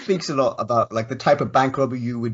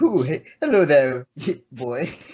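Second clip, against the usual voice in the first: playful put-on flirtatious voice; 3 semitones higher than usual. Acting out a sketch, in drag flirting with a security guard: mock-flirty voice. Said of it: "Trying to flirt with a security guard".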